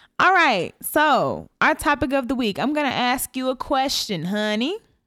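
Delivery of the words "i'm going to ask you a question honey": strong down-home country drawl. Asking a spouse the topic question of the week, sounding really country. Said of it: "that sounded really country".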